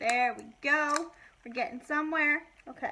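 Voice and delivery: loud, excited yelling. Struggling to open packaging while talking to viewers, yelling. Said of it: "Sorry, I'm yelling".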